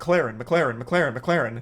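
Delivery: word said in its own way, repeated four times. Showing how the name was actually said: saying mclaren fast. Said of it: "I was just saying it fast".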